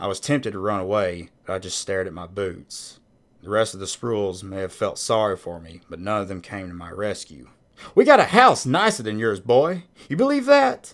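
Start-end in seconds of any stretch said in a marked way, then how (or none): 7.9-10.9 raised, high-pitched, loud boastful taunting. Hank addresses the boy until Miss Spruill tells him to quiet down; loud. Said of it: "Quiet down, Hank".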